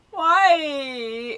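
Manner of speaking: high, loud, crying, stretched-out whimpering whine. Retelling a man told to wait for the bathroom, imitating his whine. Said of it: "but don't whine".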